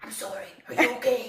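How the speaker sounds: spooky, frightening put-on voice, as scary as possible. Retelling how a taser guy ran up after hitting them: imitating a scary voice. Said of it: "the scariest voice he could".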